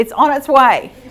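loud distant call. Retelling a voice from the back of the church: imitating someone yelling out. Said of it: "a voice from the back of the church yells out".

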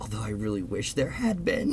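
quiet mutter under the breath. Retelling what a woman added after answering no, muttered under her breath. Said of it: "but then under her breath was like".

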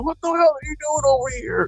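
mock screaming. Recounting a man who came over screaming at the speaker: retelling a scream. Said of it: "started just screaming at me".

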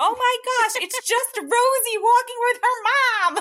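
very high, loud yelling. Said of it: "like, yelling at the dogs".

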